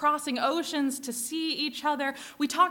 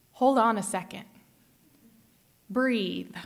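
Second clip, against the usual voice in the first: tender, gentle, low, calming voice; 5 semitones lower than usual. Speaker retells what a TSA agent said while leaning over; imitating a gentle tone. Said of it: "said in a gentle tone".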